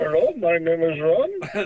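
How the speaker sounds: overdone put-on Indian accent. Coaching a phone greeting, speaker demonstrates it; slight indian accent. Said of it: "do it with a slight Indian accent".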